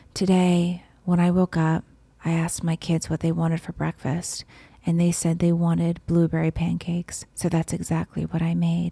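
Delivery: calm, soft, soothing, relaxing zen voiceover. Imitating a cooking creator's video voiceover, in a put-on relaxing zen voice. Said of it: "she talks kind of like this".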